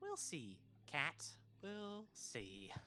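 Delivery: soft, strained, swooping, through gritted teeth. The game master voices a character answering a player's demand, with a gritted smile. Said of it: "says again with a gritted smile".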